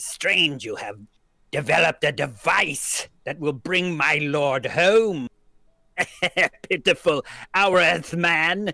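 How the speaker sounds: high, loud, sibilant snake-man hiss. Game master voices the energy coming out of Professor Nerdlinger, in a hissing voice. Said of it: "as it hisses. It says".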